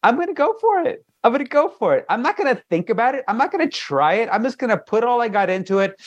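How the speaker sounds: high, hyped-up, pumped-up self-talk.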